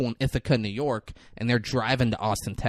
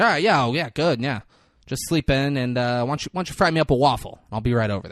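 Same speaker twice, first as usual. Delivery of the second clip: mock, dripping sarcasm, condescending, talking-down tone; 4 dB louder than usual. Retelling a movie phone call: imitating sarcastic condescending tone. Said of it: "real sarcastic and condescending".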